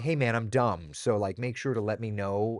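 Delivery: ordinary delivery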